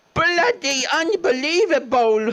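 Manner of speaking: high, slow, shrieked mock Cockney accent.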